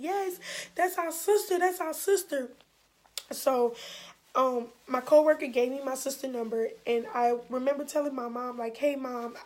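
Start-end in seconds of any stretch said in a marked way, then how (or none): 0.0-2.5 sobbing, high, tearful screaming. Speaker retells the sisters' answer to the mother's question; imitating screaming and crying. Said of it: "started screaming and crying and saying".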